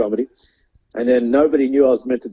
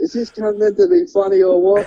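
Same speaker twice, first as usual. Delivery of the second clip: very high, swooping shouted yell. Retelling a heckler from the back during a gig: imitating a heckler yelling. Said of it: "someone yelled out".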